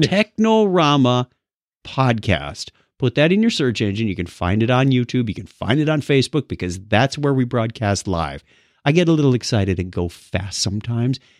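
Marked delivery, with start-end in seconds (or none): 0.0-2.7 slow, deliberate, unhurried, spelled out carefully. Podcast host repeats the show name for listeners, saying it slower. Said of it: "Let me say that slower".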